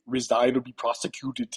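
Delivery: action-movie tough-guy voice. Delivering a demand to resign in your best Arnold Schwarzenegger voice. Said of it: "in your best, um, uh, Arnold Schwarzenegger voice".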